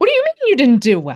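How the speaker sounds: ramped-up, very loud, high-pitched outburst. Giving an example of up-regulating a reaction to a bad test, brought right up. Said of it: "we can bring it right up there".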